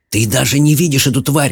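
hissed line. Reading a story, Jared speaks to his sister Mallory, hissed. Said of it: "прошипел Джаред".

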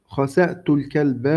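ordinary talk

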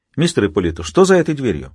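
ordinary delivery, nothing marked

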